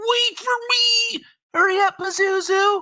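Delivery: squeaky, very high little cartoon animal voice. Acting out a cute cartoon pet chasing after its owner: Disney pet animal voice. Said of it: "cute little animal just goes bouncing off".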